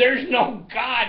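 put-on high, shouted yell of children in unison. Acting out rowdy kids answering a call for an opening prayer, retelling a yell. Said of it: "And they yell".

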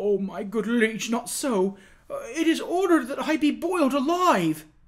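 broken, imploring, high, rising terrified pleading. Narrator reading a prisoner appealing to the king: imploring, broken, terrified pleading. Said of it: "The prisoner clapped his hands together with sudden energy and wrung them despairingly at the same time, appealing imploringly to the king in broken and terrified phrases".

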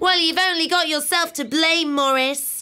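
haughty tone. Narrator reads one character speaking to another; snooty tone. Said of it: "said in a snooty tone".

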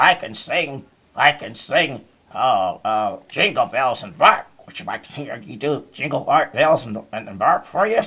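talking dog puppet voice. Puppet dog character talking: Doug the dog voice. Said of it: "Hi, my name is Doug the dog".

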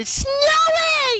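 very high-pitched, sing-song, swooping voice. Playing with friends as snow appears on screen, in a high-pitched voice. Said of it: "Try not to do the high-pitched voices".

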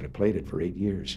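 plain

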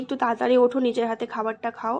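normal talking voice

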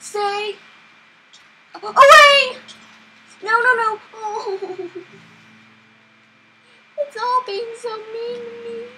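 scared, fearful, high, loud frightened pleading. Fleeing a monster in a game, scared. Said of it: "I'm so scared".

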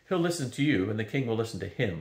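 plain

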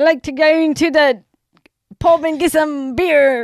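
clumsy put-on Irish accent, very loud and high. Playing an accent guessing game with another speaker: attempted Irish accent.

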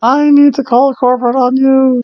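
high, loud, whiny, angry voice. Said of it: "she sounds like whiny Kmart mom".

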